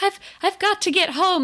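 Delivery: play-acted, very high, feeble, weakened voice. Retelling a scene where Fua grows faint: imitating Fua's weak voice. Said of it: "in kind of a weak voice".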